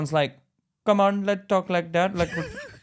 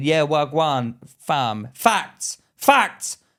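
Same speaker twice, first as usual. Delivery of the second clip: very slow, drawn-out, put-on Jamaican street slang; 3 semitones lower than usual.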